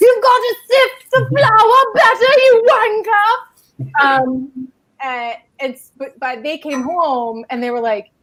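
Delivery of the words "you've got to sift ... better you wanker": shrill, very high-pitched, scolding yell. Retelling videos pretending a yelling Gordon Ramsay scolds them: imitating Gordon Ramsay yelling. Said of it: "pretending like Gordon Ramsay was yelling at us".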